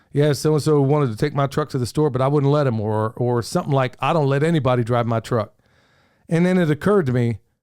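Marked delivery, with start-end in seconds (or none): none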